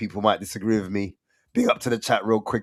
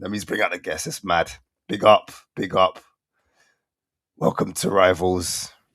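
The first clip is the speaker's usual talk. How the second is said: hoarse, voice nearly gone. Welcoming viewers and bringing out guests, hoarse, voice nearly gone. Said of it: "My voice is gone".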